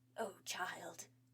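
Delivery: hissing sigh. Reading a story aloud, the snake speaks with a hissing sigh. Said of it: "the snake hissed a sigh".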